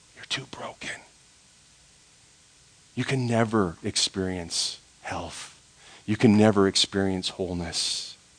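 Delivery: soft, hushed whisper full of fear. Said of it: "Comes along and says".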